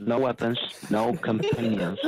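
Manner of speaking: ordinary delivery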